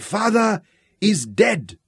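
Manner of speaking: very high, slow, drawn-out crying out. As a brass plaque is lowered, a man steps from the ranks, crying out. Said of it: "he cried".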